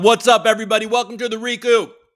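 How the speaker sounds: very high voice, speaking through a mouthful. Host opens the Recoup show while eating a bagel, talking with mouth full. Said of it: "Sorry, I was just eating a bagel".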